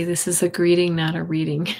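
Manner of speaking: plain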